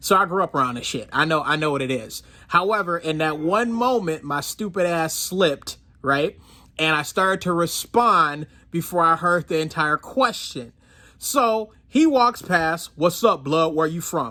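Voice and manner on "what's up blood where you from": put-on deep, masculine man's voice. Retelling a stranger who walked past and asked a question, in a deep masculine voice. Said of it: "In like a masculine, deep voice, deeper than mine".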